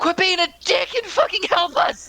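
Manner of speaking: very high-pitched, shrill screaming. Playing a character who tells an ally to help: screaming. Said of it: "screams at him".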